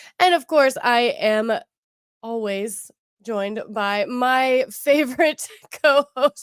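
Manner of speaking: giggly, laughing, barely holding it together. Introducing a favorite co-host on the podcast, laughing while talking. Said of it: "I can't even say that without laughing".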